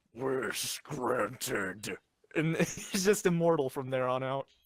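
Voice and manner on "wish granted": low, put-on mythical dragon voice. Describing Ho-Oh telepathically speaking to Ash: Shenron voice. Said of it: "just like in a Shenron voice".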